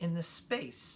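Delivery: plain reading voice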